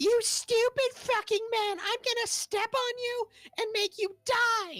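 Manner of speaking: piercing, shrill, very high voice. Narrating a game scene, voicing someone heard from the corner: shrill voice. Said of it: "you hear a voice shrill in the corner".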